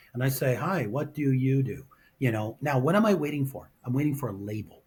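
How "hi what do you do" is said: very slow, mechanical, drawn-out robotic delivery. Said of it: "I do this robotically".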